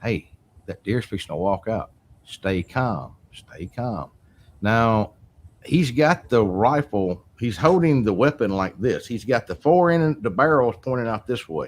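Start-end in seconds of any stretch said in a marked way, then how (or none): 0.0-4.1 hushed half-whisper under the breath. Retelling half-whispering to a cousin while hunting a deer: retelling a half-whisper. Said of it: "whispering to my cousin".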